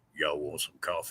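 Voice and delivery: very low, very quiet, deep hushed rumble. Storyteller warning listeners about getting lost in the forest, deep Bigfoot voice. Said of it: "you hear deep voices".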